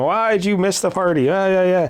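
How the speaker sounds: light, scolding, yelling outcry. Retelling how a character yells at him in the hospital: imitating someone yelling. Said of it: "yelling at him".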